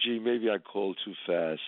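ordinary talk, nothing marked

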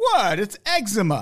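fake British accent laid on thick. Joking back and forth with another speaker, answering in a put-on british accent. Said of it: "do you like my British accent there?".

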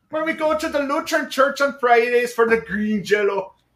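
put-on half-hearted Norwegian accent. Joking about being from Minnesota in a half-assed Norwegian accent. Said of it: "it's half-assed Norwegian".

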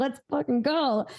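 acted-out, fired-up, all-in intense hype. Retelling own past words when passion comes through: imitating own intense hype. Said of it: "I'm just, like, intense".

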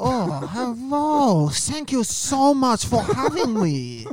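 deliberate fake Chinese accent, slow and high. Playing a co-host from china in an accent bit: put-on chinese accent. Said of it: "my co-host from China".

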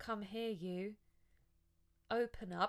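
toneless, flat monotone, no intonation at all. Criticizing a woman's line delivery by quoting her, imitating a monotone, flat delivery. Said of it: "delivery of every line is so monotone and flat".

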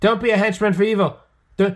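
put-on high, loud, preachy voice with Australian accent. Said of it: "He's like".

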